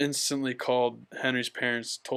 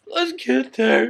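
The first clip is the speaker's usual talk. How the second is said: mock very high, very loud blubbering, wailing cry; 12 semitones higher, 9 dB louder than usual. Speaker retells riding bikes with flat tires to a friend's house, imitating crying. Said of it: "just like crying".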